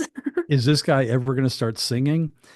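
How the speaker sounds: normal talking voice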